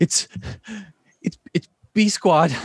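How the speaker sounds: out of breath, panting, gasping, stammering. Voicing a character bursting through trees: panting, out of breath. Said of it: "panting and is like".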